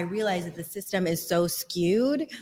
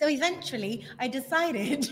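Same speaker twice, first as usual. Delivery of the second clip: put-on British accent, pitched up; 7 semitones higher than usual. Asked by the host to tell the rest of the story in a British accent. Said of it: "can you explain the rest of this in a British accent?".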